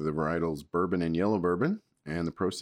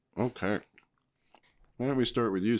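speaking while chewing a mouthful, pitched up; 6 semitones higher than usual. Asking the other person to go first, talking with mouth full. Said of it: "since my mouth is full".

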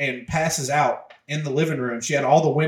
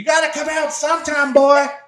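shrill, loud, high-pitched screaming; 12 semitones higher, 7 dB louder than usual. Retelling how Mom paced the yard searching: imitating Mom screaming. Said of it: "she's screaming".

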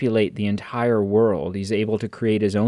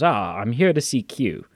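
slow, unhurried, drawn-out put-on English accent. Quoting a man's line as he delivered it: English accent. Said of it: "he does an English accent, and he goes".

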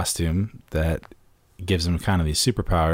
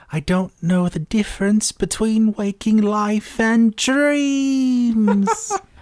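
very high put-on London British accent; 5 dB louder than usual. Asked to do a man's voice for listeners: put-on high London British accent. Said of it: "He's a high-talking London British man".

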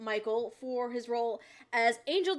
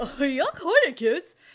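louder, goofy, silly cartoon voice; 5 semitones higher, 7 dB louder than usual. Describing a show's character voices to friends, the speaker demonstrates one in a goofy cartoon voice. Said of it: "these fun cartoony voices that are just like".

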